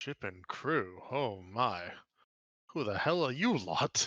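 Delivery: gruff drawl, dragged out very slowly. Voicing a character the adventurers ask for a ship and crew; gruff voice.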